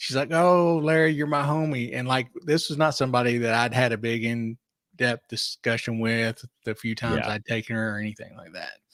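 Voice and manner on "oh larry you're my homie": put-on high, very drunk gushing voice. Retelling what a passenger said getting into the car: imitating a very drunk passenger. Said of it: "very drunk".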